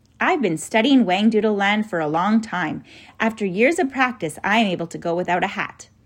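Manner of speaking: ordinary delivery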